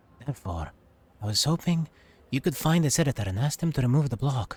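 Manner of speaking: hushed whispering. The site administrator asks the listener to find the editor, whispering. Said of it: "I'll whisper it to you for now".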